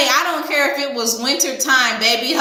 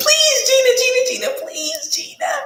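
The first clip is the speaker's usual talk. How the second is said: very high, repeated, pleading voice; 12 semitones higher than usual. Comparing the man's plea to a TV episode, imitating Martin begging. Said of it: "He was begging like Martin on the episode".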